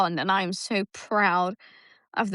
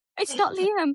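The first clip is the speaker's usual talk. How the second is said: put-on, very high, flustered and panicked blurt; 11 semitones higher than usual. Retelling a phone call that was not from Liam: imitating Fifi panicking. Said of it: "And she panicked".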